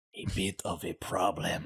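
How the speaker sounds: hoarse, throat-clearing voice. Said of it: "with just kind of a, a frog in his throat".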